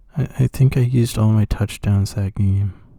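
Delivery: put-on sad-sounding voice. Retelling how Nick Foles answered when asked for a passing touchdown, imitating Nick Foles sounding sad. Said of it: "it was so, like, sad sounding".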